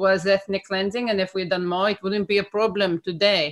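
put-on Israeli accent. Retelling what an author answered when challenged, in a put-on accent. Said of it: "great accent, by the way".

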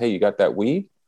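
usual speaking voice

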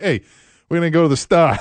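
loud, put-on Maine accent. Recalling how you talked after a couple of weeks visiting a family, in a put-on Maine accent. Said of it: "I picked up that damn accent".

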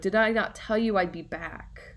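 ordinary talk

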